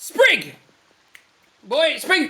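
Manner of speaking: high, swooping calling-out voice. Voicing a character who suddenly calls for his helper: calling out for someone. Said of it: "And all of a sudden he goes".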